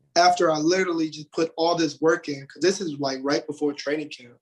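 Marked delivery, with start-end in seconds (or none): none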